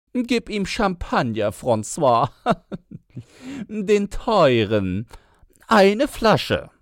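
very high laughing yell. A woman calls across to francois, shouting while laughing. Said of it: "Schrie sie lachend hinüber".

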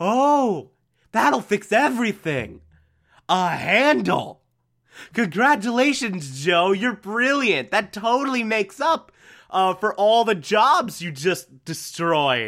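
slow, mock-scornful, sarcastic rant. Acting out how someone calls a man out, in a mock-sarcastic rant. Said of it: "does the sarcastic rant of".

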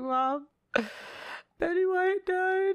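mock tearful, holding back tears, very high, slow. Retelling breaking the news of a celebrity's death to mom, imitating own tearful voice. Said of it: "And I'm like in tears".

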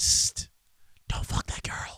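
breathy, smug, patronizing, condescending whisper. The speaker voices his hissing radiator's advice to him: condescending whisper. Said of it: "Just whispering, condescending life advice".

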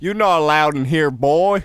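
booming, loud, high-pitched put-on Texan accent. Asked to show an accent from Texas: put-on Texan accent. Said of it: "this is my Texas".

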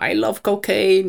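sudden high, loud, weird blurted shout. Recalling a schoolmate obsessed with The Hangover, imitating a classmate shouting. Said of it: "así lo gritaba en media clase".

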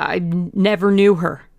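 stammering with fear. Dorian Gray answering a man who says he will die, stammering with fear. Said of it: "he stammered".

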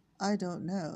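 ordinary delivery, nothing marked

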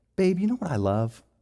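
sweet, affectionate, tender, loving tone. Retelling own words to his wife in the car: imitating own tender loving tone. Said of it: "kind of in this tone".

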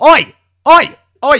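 very loud, high, shrill, bellowed "oi" calls. Show host opening the banter section, giving a loud shout. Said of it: "I think I was clipping slightly there".

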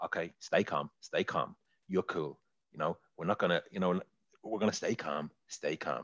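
low, self-steadying, calm coaxing voice. Retelling a film scene where he tries to stay calm: Michael Caine impression. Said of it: "That's a good impression".

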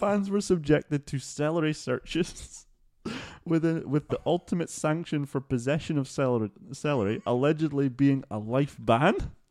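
words fighting through giggles, laughter breaking through. Telling a story about fans offering celery: laughing while talking. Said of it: "I can't even say this without laughing".

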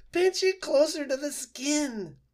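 very high, shrill, yelping cry, "skin" drawn out. Fink the fox, as a quill snaps off while Roz pulls it: yelping. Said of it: "Fink yelped and said".

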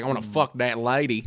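put-on American southern accent. Imitating what far-right listeners might say about a joke, in a southern accent. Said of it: "Don't know why I did a southern accent".

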